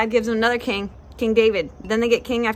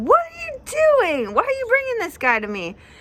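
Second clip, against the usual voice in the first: high, loud, mad, upset exasperated outburst. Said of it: "He's upset".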